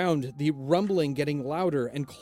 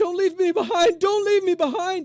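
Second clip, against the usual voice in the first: panicked, fearful, shrill scream, very high, louder; 6 dB louder than usual. Narrator voices Tennis struggling to reach the ship, screaming in fear. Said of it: "He screams out".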